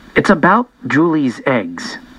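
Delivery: ordinary delivery, nothing marked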